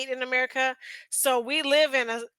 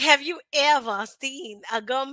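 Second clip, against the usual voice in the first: botched, failed put-on British accent. Quoting an amazed woman about a big gum packet, bad attempt at her accent. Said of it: "I can't do her accent".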